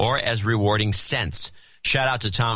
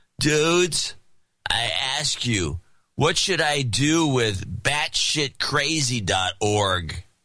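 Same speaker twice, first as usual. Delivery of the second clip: put-on laid-back stoner dude voice; 3 semitones higher than usual. Reading a friend's request aloud as he asked, in a stoner voice. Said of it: "He wants this done in a stoner voice".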